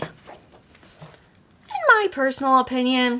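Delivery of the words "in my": voice cracking, very slow delivery. Answering a viewer's question about pie: voice cracking. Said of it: "my voice cracked there".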